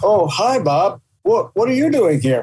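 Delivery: guarded, wary tone. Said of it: "looking at me like this, like, out of the corner of their eye".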